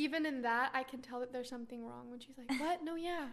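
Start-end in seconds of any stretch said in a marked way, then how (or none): 2.6-3.2 withdrawn, upset, brushing-off tone. Imitating a friend answering when upset: imitating a quiet upset reply. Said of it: "she'll say things so quietly".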